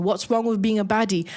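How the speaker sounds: plain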